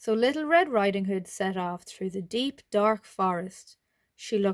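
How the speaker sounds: plain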